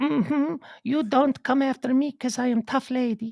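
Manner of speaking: put-on Finnish accent. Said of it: "I'm not sure if I've ever even heard the Finnic accent".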